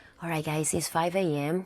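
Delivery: hushed half-whisper. Talking to the camera at five AM, parked near sleeping people: half-whispering. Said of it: "I am whispering because".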